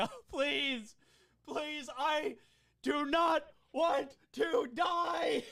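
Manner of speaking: screaming, crying out in pain. Voicing a tripped enemy who falls onto a table: screaming out in pain. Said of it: "starts kinda screaming out in pain".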